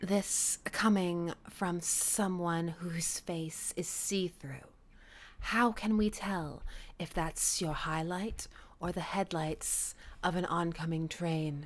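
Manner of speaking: soft, slow whisper.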